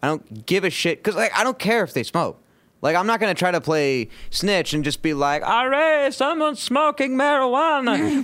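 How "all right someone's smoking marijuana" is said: very high, put-on, turn-of-century immigrant voice. Acting out a snitch reporting smoking: mock early 1900s immigrant voice. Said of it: "early nineteenth century immigrant".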